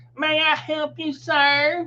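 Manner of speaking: high youthful voice with sir drawn out. Retelling a floor worker in his early twenties coming over, imitating his high voice. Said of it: "That's about how high his voice was".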